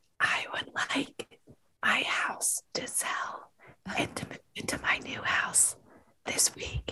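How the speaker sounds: whispered, barely voiced, very quiet. Taking a turn at the whisper method, whispering. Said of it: "Yes, it's the whisper method".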